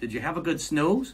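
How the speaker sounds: put-on Minnesota accent. Remembering a grandmother leaning over the crib, quoting her in Nana's Minnesota accent. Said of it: "going in her Minnesota accent".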